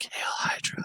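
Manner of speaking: imitated whisper. Retelling closing the kid's door every night: retelling own whisper. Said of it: "and I just whisper".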